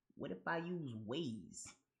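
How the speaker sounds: a soft, hushed, barely audible half-whisper. Retelling own question to someone about map apps: retelling a half-whisper. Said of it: "and I whispered".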